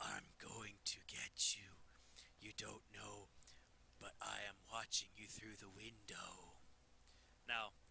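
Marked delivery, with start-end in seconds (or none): 0.0-6.3 creepy, low, hushed, put-on spooky voice. Speaker demonstrates how to get a spooky voice on: spooky voice. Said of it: "Spooky voice".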